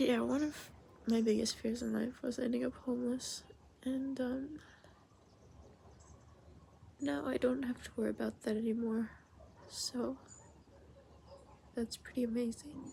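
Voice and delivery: tearful, crying while speaking. Speaking to the camera while exhausted, crying while speaking. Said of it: "I don't know why I'm crying".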